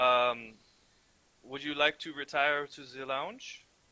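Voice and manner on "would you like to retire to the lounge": vaguely European voice. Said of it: "giving her a vague European accent".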